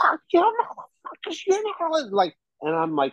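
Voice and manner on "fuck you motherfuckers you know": mock drunken holler, very high-pitched, mild. Retelling how a roommate screamed at the cops, imitating Brittany screaming. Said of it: "she is screaming at the cops".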